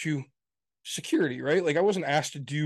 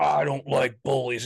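ominous wrestler voice, much slower. Retelling a man who gets up to speak at a school; Undertaker-style ominous promo. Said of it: "goes into like this very like Undertaker type thing".

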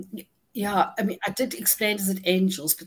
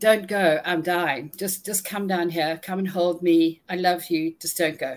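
plain

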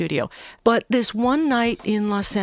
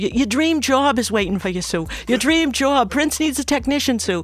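put-on strong Boston accent, higher pitch; 4 semitones higher, 3 dB louder than usual. Retell how he told Sue about the Prince job, in John Sacchetti's strong Boston accent. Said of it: "he had this really strong Boston accent".

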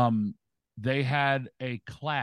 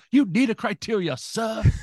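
very high, loud, fake English accent; 10 semitones higher, 5 dB louder than usual. Teasing another speaker about needing criteria: put-on English accent. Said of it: "in an English accent".

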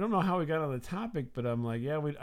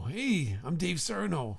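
put-on slow, drawn-out, pitched-up young male voice; 5 semitones higher than usual. Imitating how a classmate talked. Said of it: "he talked like this".

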